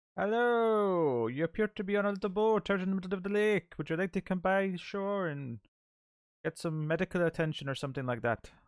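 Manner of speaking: put-on weird blend of Irish and Indian accents. Playing a cop calling to someone on a lake boat: weird mixed Irish-Indian accent. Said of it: "weird mix between an Irish and an Indian accent".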